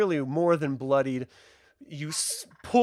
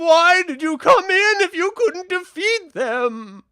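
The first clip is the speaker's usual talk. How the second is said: shrill, furious shriek, very high and loud; 9 dB louder than usual. Voicing a character screaming from inside: Taryn screaming angrily. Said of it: "Taryn from inside is screaming".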